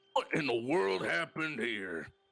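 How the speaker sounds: big, gruff, rough-edged bruiser voice. A game narrator voices a large individual sauntering over, large gruff voice. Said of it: "You hear a large, gruff voice".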